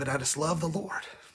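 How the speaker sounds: choked up with emotion. Preaching about love for the Lord: choked up with emotion. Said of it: "I'm sorry for getting choked up or upset".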